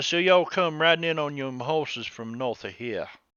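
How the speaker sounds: fake, put-on Cajun accent. Voicing Ace as he questions the riders, in an attempted Cajun accent. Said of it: "that's that's too Georgia. Sounds too Georgia. I'm trying to get my Cajun accent on".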